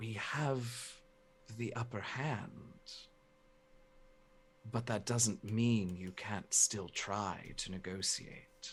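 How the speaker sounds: barely-there, very quiet whisper. Voicing a character up in the Shadow King's face: very quiet whisper. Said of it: "very, very quietly just whisper".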